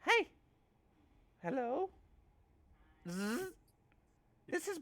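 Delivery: small, very high, squeaky voice. Describing a voice Virgil hears in his helmet: small voice of Brillo. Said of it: "you would hear a small voice".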